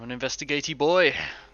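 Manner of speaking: put-on French accent, loud. Boasting after a good investigation roll: French accent. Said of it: "speaking in a French accent with a mustache".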